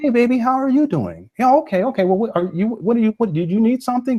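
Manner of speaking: gentle comforting tone. Showing how to speak to an emotional daughter, the speaker demonstrates a gentle, comforting tone. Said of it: "You see how my tone changes?".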